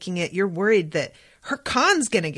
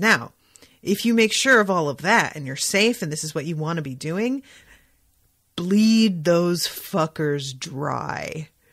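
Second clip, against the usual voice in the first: mock dead serious deadpan, no hint of joking; 2 semitones lower than usual. Retelling advice given after a pause: imitating dead-serious delivery. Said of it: "he says it with dead seriousness".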